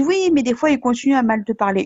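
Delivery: plain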